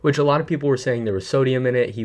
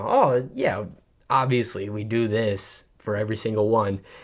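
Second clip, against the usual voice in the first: a little bit sarcastic, mocking tone. Mocking a brand owner's reply to critics: imitating Logan Paul's sarcasm. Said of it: "make it seem a little bit sarcastic".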